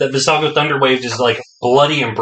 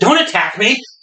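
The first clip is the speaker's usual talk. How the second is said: brief, sudden, quick high scream; 7 semitones higher than usual. Voicing a guard as the fight turns on him: quick scream. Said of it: "a quick scream of".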